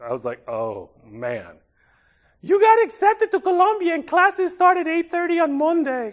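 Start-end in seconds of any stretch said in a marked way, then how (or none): 2.4-6.1 put-on Dominican-accented speech. Retelling what his mother said on the phone, in a thick Dominican accent. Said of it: "my mother calls me in a thick Dominican accent and says".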